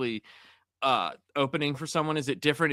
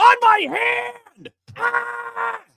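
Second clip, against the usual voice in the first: put-on screaming comedian rant, higher and louder; 9 dB louder than usual. Retelling a comedian's bathroom bit to the others: Kinison impression. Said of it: "sounds like you're doing a Kinison impression".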